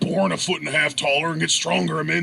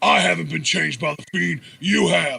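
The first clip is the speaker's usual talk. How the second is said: put-on growly voice. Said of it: "he did it in his stupid new fucking growly voice".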